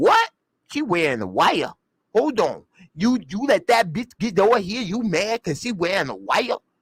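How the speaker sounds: put-on New York gangster accent, tough, swooping. Retelling what a woman said on seeing someone moping, new york gangster accent. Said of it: "Trying to do her little New York gangster accent".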